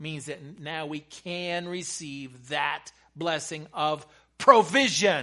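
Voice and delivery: slow, growing loud with excitement.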